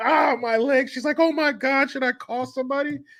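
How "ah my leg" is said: put-on scream of pain. Retelling a phone call where a man trips and breaks his leg, mock screaming in pain. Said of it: "he's screaming on the phone".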